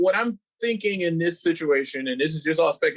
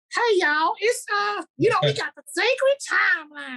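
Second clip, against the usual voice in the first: very high, squeaky put-on voice. Explaining the sacred timeline, trying to mimic Miss Minutes. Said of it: "I'll try to mimic Miss Minutes".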